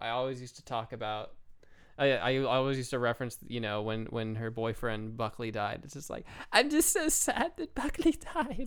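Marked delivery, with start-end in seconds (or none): 6.5-8.7 put-on very high Southern Valley Girl voice. Speaker recalls a line they used to reference, in Luanne voice. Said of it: "the Luann voice is kind of like a mixture of Southern Girl and Valley".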